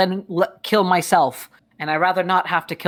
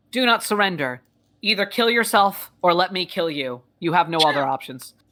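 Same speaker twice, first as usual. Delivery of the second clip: automated robot war-machine announcer voice. Voicing a giant gun mech landing behind an enemy: mech's announcement voice.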